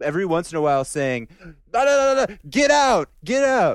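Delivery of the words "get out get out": very high, very slow, loud, drawn-out furious scream. Retelling a man poking him in the chest, retelling someone screaming. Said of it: "screaming at me in Italian".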